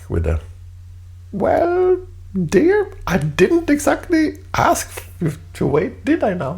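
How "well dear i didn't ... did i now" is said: very high, lighthearted delivery. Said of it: "lightheartedly ping pong the comment back".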